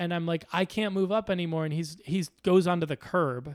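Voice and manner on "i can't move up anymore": raised shouting voice. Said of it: "shouting back at him".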